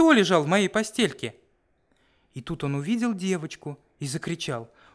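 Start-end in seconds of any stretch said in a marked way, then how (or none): 0.0-1.3 tiny, thin, piping squeak, pitched up. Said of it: "запищал тоненьким голосом".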